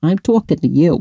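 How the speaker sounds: put-on New York accent. Author talking directly to a young lady about her book, new york accent. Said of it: "Going to use my New York accent".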